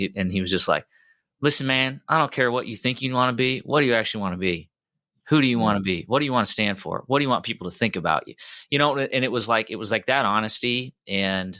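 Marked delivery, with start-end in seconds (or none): 1.4-8.3 put-on Southern accent, much higher pitch. Retelling what an HR person once said to him, in a Southern accent. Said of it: "he had a Southern accent".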